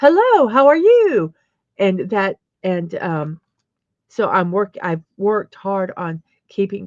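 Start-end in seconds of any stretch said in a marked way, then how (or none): 0.0-1.3 high, raised on-stage presenter voice. Speaker shows how their voice rises when presenting: pitched-up presenting voice. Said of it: "my voice would pitch up".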